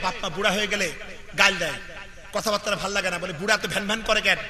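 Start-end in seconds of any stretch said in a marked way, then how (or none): none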